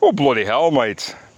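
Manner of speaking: clumsy, poorly done put-on English accent. Speaker saying a week of rain makes them feel English, bad English accent. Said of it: "I can't do an English accent too well".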